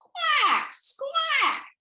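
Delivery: "squawk" very high, swooping, drawled out in Texas drawl. Showing how the word sounded back in texas, with a texas drawl. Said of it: "it had that Texas drawl".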